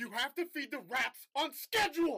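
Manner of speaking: angry yell, high pitch and slow.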